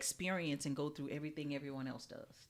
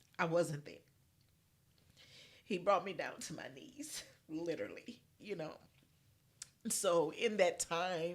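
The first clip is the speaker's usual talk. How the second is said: speaking through tears, voice breaking; 3 semitones higher than usual. Sharing a personal faith story in conversation, the speaker is crying, voice breaking. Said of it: "I'm sorry, I'm crying".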